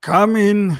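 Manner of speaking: put-on weary, aged voice calling out very loud, high. Voicing someone inside a tavern answering a knock: tired old voice. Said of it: "A tired, old voice calls out".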